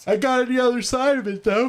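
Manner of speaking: very high, stretched-out, yawning through the words. Tired after a sleepless night, answering in conversation, yawning while talking. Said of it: "I'm sorry if I'm yawning too much".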